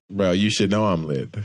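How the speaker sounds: plain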